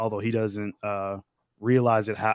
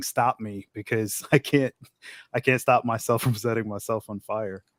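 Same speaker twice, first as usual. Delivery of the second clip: sobbing, bawling, pleading through tears. Retelling a tv scene of a man begging to be stopped: imitating someone bawling. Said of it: "bawling his eyes out, crying".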